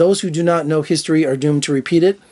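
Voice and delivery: ordinary talk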